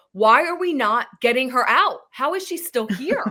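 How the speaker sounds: play-acted baffled, incredulous yelling. Describing watching the show at home, retelling yelling at the TV. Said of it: "I'm yelling at the T V like".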